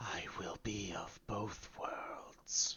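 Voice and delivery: very soft whisper, muttered as an aside. Narrating a grinning, red-eyed figure's line as he whispers to himself. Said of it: "he he he whispers to himself".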